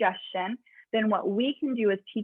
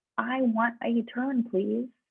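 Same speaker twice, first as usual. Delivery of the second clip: softer, quieter, lower-volume voice. Coaching someone to ask for a turn, modeling it in a quieter voice. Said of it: "Make your voice match mine".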